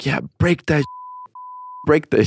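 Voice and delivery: acted, high, urging cry in woman's voice. Retelling what a lady with her husband was screaming, imitating her screaming. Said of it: "The lady was screaming".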